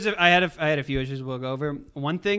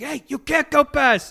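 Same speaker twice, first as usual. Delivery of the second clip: mock, very high-pitched, loud shouted yell; 10 semitones higher, 5 dB louder than usual. Retelling an anime scene where Okuyasu blocks Josuke: imitating Okuyasu yelling. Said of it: "yelling at him".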